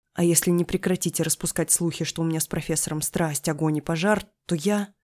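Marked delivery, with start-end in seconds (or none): none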